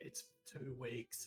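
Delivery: dropped, deep, very soft and quiet delivery. Planning a joke message to a player, deeper voice. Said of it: "And then in a deeper voice".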